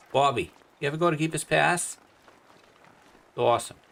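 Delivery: put-on Boston accent. Joking around and putting on a Boston accent. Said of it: "My Boston accent".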